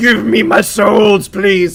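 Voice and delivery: loud, menacing, sinister villain voice. Demanding souls from enemies in a game: sinister voice. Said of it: "Was that too sinister?".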